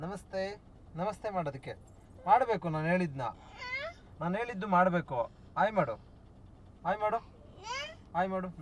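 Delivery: put-on high, soft, coaxing baby talk.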